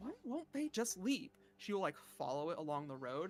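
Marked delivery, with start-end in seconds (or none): 0.0-1.3 mumbling away to herself. Voicing a character following a creature: muttering to herself. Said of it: "mutters to herself".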